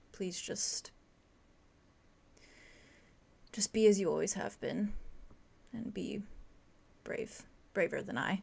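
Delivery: slow, fading voice. Retelling what a character says as the scene goes quiet, slow, fading voice. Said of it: "he just slowly says".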